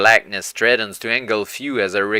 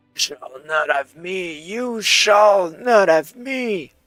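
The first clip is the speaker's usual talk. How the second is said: forced out, choked and pitched up; 8 semitones higher than usual. Narrator voices a character crawling toward a fiery wall, muttering in choked breath. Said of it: "muttering in choked breath".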